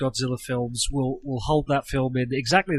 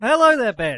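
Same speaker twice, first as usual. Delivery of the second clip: loud, pitched-up breakfast radio host voice; 9 semitones higher, 8 dB louder than usual. A podcast guest greets the host in a radio voice. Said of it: "radio voice".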